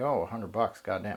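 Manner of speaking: ordinary delivery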